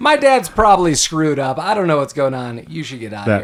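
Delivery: mock, completely heartfelt, earnest delivery. Retelling a key quote from someone: imitating full sincerity. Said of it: "in full sincerity".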